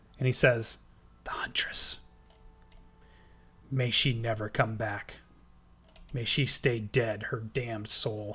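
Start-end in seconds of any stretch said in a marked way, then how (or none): 1.2-8.4 low, hushed, secretive whisper. Narrating a scene where a character whispers to you, looking over his shoulder. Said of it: "he whispers to you as he's looking over his shoulder".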